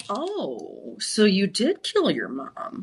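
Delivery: very slow narration, every word drawn out. Imitating the Dateline narrator for a friend: Keith Morrison impression. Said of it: "where he's like".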